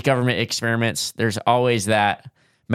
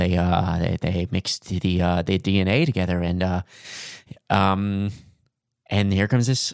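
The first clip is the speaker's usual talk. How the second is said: halting put-on actor voice, lower pitch; 3 semitones lower than usual. Offering theories about a mixed-DNA creature, doing a Jeff Goldblum impression. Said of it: "I'll do my best Joe, Jeff Goldblum impression".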